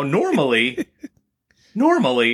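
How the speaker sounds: laughing, voice cracking through the laughter. Telling a story about shopping in the produce department, voice cracking with laughter. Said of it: "my voice is cracking".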